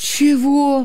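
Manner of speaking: caught off guard. Innokenty, caught off guard by Nikita's question, taken aback. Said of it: "опешил Иннокентий".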